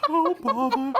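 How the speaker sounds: very high-pitched cartoon bear voice. Voicing a stall keeper run by Winnie the Pooh: Winnie the Pooh voice. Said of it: "It's it's ran by Winnie the Pooh".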